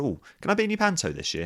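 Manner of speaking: really cheeky, high and quick.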